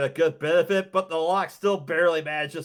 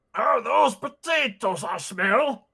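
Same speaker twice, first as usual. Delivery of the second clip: gruff, rough male voice; 6 semitones higher than usual. Narrator voicing an unseen speaker behind a padlocked iron gate, gruff male voice. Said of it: "you hear a gruff male voice say".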